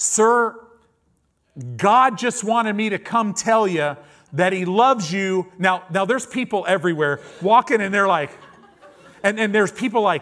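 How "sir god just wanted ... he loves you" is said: acted-out high, loud shout. Recounting calling out to a man in a car with window down: retelling own yelling. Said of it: "and so i'm yelling i'm like".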